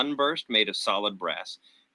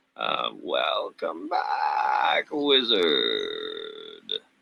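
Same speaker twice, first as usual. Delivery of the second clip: very low, creaky, bubbling monster voice; 11 semitones lower than usual. Narrating a game, voicing the spectator as Theron walks back in: low, bubbly spectator voice. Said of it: "the spectator's low, bubbly voice".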